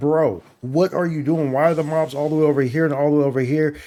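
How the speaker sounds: normal talking voice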